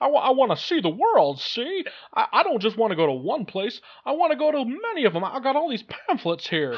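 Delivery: very high, swooping movie-star voice. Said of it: "my one decent Jimmy Stewart impression".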